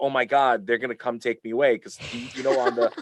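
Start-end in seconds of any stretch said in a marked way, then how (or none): 0.0-1.8 mock-frightened, panicked freak-out. Retelling a reaction after ripping tags off a bed; retelling a panic. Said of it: "So I'm freaking out".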